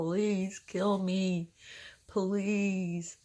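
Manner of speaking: put-on tearful begging. Retelling lying in bed crying to God: retelling own tearful begging. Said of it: "laying here crying to God".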